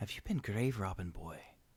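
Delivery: character voice in a whisper. Narrating a game, voicing the old dwarf Mustbeard as he leans in to the boy: Mustbeard whispering. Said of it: "leans in and whispers to him".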